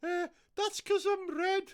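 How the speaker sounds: very high, put-on Scouse accent. Playing the coronavirus as a special guest, in a Scouse coronavirus character voice. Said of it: "why he's a Scouse coronavirus".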